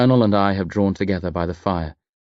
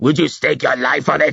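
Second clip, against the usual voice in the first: angry, rough, creaky snarling voice; 6 semitones higher, 3 dB louder than usual. A man holding up a drawing questions the narrator, snarling. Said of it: "He snarls".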